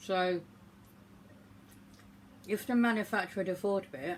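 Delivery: speaking through a mouthful. Tasting a marshmallow and reviewing it, talking with mouth full. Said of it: "sorry, I'm talking with mouthful".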